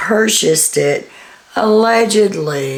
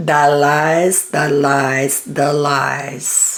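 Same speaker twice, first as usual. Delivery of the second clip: very slow delivery, every word drawn out; 3 semitones lower than usual. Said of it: "in my best [name] voice".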